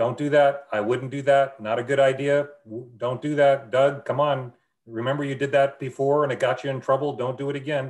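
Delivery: loud yelling and screaming, over and over. Acting out God warning someone in their mind: imitating God yelling and screaming. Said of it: "he's yelling and screaming".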